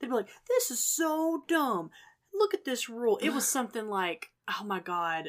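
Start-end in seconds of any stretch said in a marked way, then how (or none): 0.5-3.2 put-on griping, high, drawn-out kid voice. Recalling kids at work complaining about rules, the speaker does a kid impression. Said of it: "That's my kid impression".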